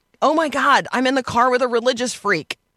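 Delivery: high scream, held small and reined in. Retelling what an armed man screamed in the car: imitating someone screaming. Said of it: "And he's screaming".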